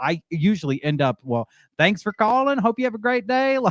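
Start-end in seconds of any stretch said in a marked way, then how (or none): 1.2-3.6 very high Southern drawl, Texas style. Texan explaining how she ends up answering work calls, in a texas drawl. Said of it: "kind of talk like this".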